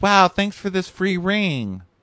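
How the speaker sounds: high, slow, mock gushing girl voice. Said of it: "It's like".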